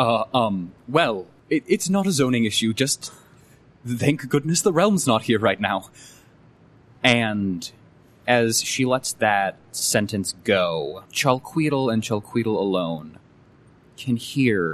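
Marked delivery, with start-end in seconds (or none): 0.0-5.9 stammering character voice. Game master voices Gracious Sparrow answering a companion's question, stuttering. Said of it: "she simply stutters for a moment".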